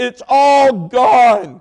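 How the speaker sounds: high, loud bawling wail through sobs. Retelling what she said after he pulled over and asked, imitating someone bawling. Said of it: "she was bawling, crying".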